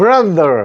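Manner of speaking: strong, hard stress on ro in brother. Drilling an English word's stress: strong stress on ro in brother. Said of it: "러에 강하게".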